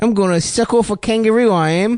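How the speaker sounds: fake, off-target South African accent. Imitating a friend's dad for laughs: bad South African accent. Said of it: "That's not how South Africans sound".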